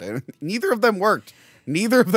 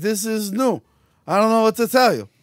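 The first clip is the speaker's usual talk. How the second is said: put-on laid-on, pitched-up Italian-sounding accent; 6 semitones higher, 3 dB louder than usual. Retelling a movie scene, voicing a character: Steven Seagal being Italian. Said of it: "you sound like Italian".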